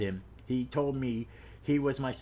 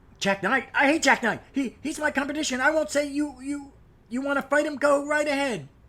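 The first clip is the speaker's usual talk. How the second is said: very high, loud creature voice; 13 semitones higher, 7 dB louder than usual. Recapping a story, voicing the mysterious scarfed stranger: Ice Warrior voice. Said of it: "that's my Ice Warrior voice from Doctor Who".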